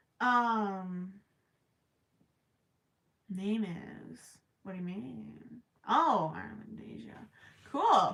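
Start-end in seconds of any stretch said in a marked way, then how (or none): 0.2-7.2 slow mumble, reading-aloud delivery. Reading a name aloud mid-conversation, mumbling while reading. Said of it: "I'm mumbling while I read".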